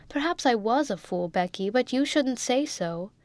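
ordinary delivery

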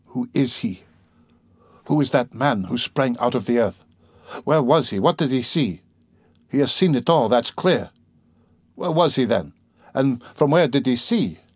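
usual speaking voice

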